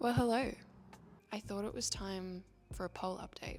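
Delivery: soft, soft-spoken talking. Recording an update at six a.m., not quite woken up; talking softly. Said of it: "If I'm talking softly".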